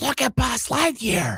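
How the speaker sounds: put-on very loud whisper. A dad retelling what his son said while they were whispering, super loud. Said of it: "like super loud".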